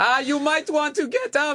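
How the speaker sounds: put-on accented English yell. Retelling a yell at a woman lying in the crosswalk: imitating yelling in accented english. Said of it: "I yelled in, like, accented English".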